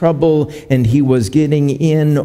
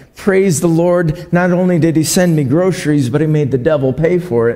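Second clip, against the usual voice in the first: ordinary delivery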